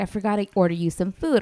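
plain

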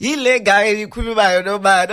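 high, loud, teasing voice.

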